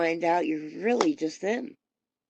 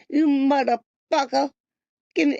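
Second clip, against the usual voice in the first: mock toothless mumbling, higher pitch; 8 semitones higher, 5 dB louder than usual. Recalling how they used to mock people without teeth, imitating toothless mumbling. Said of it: "now I sound like that".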